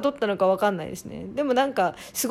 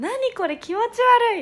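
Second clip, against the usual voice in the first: put-on shriek, much higher; 13 semitones higher than usual. Retelling how the girls reacted to something brought in, imitating their shriek. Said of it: "女子からはもう悲鳴ですよね".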